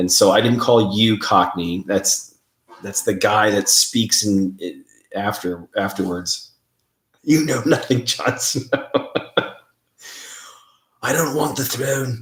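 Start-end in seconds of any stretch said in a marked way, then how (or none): 7.2-12.2 put-on English accent, pitched up. Quoting a character's lines, trying to talk in an English accent. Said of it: "I'm done trying to talk in an English accent".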